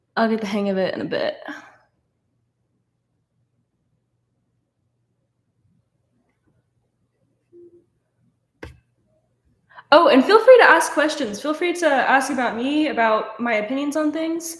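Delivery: jumpy, anxious chatter. Reading comments aloud to viewers during a stream, nervous and jittery. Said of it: "I'm so nervous right now".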